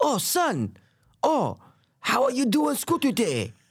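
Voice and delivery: very high, slow voice swooping way up. Showing how the actor voices the rat mentor: Jackie Chan voice. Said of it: "how Jackie Chan talks".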